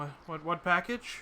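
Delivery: loud, jittery, nervous man, stammering, tripping over words. Voicing a confused man answering a question, nervous. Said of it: "just like wringing them nervously".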